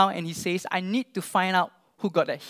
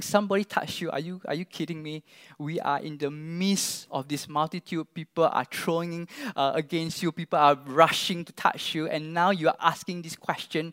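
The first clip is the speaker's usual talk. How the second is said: plain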